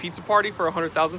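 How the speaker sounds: normal talking voice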